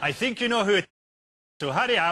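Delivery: put-on Russian accent. Phoning Tony Blair in an improv scene: Vladimir Putin impression. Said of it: "I can't hold this accent forever".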